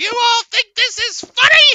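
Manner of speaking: super high, very loud chipmunk squeak. Retelling what a pitch-shifted man said to his viewers; super high-pitched squeaky voice. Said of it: "with that super high pitched squeaky voice he's like".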